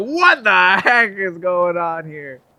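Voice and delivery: slow, loud, high, drawn-out baffled yell. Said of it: "he's like".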